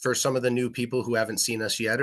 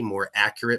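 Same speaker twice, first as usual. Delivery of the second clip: normal talking voice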